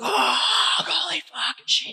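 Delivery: mock, very high, stretched, drawn-out screaming. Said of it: "And everyone is screaming".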